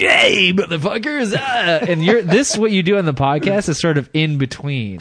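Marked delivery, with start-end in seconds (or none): 0.0-1.3 pitched-up strip club DJ working the mic. Describing the podcast co-host's voice levels, imitating strip club D. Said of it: "Then there's strip club D".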